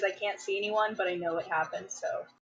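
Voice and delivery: ordinary talk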